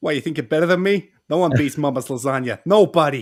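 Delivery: thick, put-on New York gangster accent. Asked to do one, the speaker performs a New York gangster accent. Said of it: "you gotta do a New York gangster accent".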